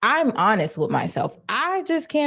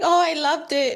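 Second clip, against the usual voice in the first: put-on high, tearful sobbing through the words; 5 semitones higher than usual. Retelling a woman's words after a test run: imitating someone crying. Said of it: "And she starts crying".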